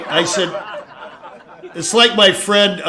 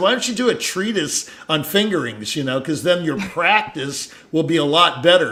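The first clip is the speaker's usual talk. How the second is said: usual speaking voice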